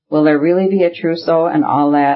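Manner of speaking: ordinary delivery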